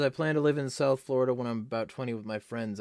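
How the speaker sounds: normal talking voice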